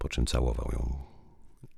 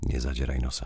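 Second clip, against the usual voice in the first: ordinary delivery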